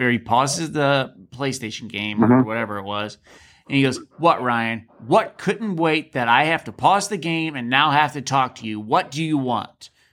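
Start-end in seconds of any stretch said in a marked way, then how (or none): 4.2-9.9 put-on irritated, annoyed, snapping tone. Retelling how Gary reacted when interrupted during a game, imitating Gary snapping. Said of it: "he snaps at me".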